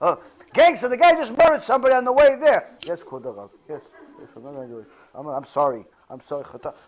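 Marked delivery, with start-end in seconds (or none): 2.8-6.7 put-on scared-to-death, cowed, stammering pleading voice. Imitating gangsters answering the rabbi: imitating a scared person. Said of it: "Scared to death".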